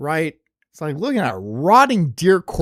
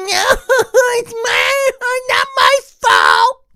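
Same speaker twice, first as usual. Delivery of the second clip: very high, very slow, drawn-out sobbing moan; 6 dB louder than usual. Mocking someone who cries instead of doing their job: mock crying and moaning. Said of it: "cry and bitch and moan".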